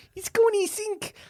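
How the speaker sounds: mock Glaswegian accent. Retelling what a girl in a glasgow cinema said: put-on glasgow accent. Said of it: "you gotta do it in the accent".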